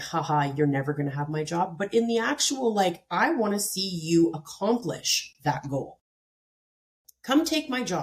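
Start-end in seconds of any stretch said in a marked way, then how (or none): 0.0-1.8 mock condescending tone, lower and faster. A speaker shows the wrong way to answer people who want their job; mock condescending tone. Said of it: "not in the like condescending way".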